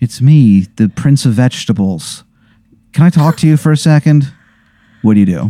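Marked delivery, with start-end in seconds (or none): 0.0-4.3 put-on prince voice lacking confidence. Voicing a stranger at the door who can't meet your gaze: Prince of Vegetables with no confidence. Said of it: "this guy has no confidence".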